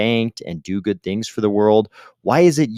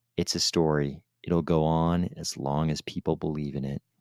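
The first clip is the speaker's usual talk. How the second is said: low, mumbled, somber murmur under the breath; 6 semitones lower, 10 dB quieter than usual. Retelling how Ben McKenzie answered, sourly: imitating Ben McKenzie muttering. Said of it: "mutters under his breath".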